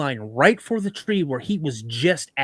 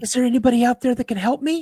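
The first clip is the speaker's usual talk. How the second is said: imitated woman's voice, higher; 8 semitones higher than usual. Retelling a story where a creature in the woods calls out: woman's voice. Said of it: "this thing says this in a woman's voice".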